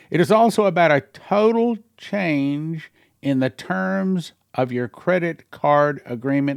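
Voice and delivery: slow, unhurried, careful, deliberate reading aloud. Reading an alert aloud so the listeners really get it, reading slowly. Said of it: "I'm reading it slow".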